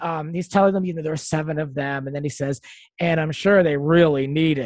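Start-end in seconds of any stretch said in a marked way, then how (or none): 3.0-4.7 put-on annoyed man voice. Retelling what a man told a group, imitating an annoyed man. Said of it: "you can tell he's annoyed".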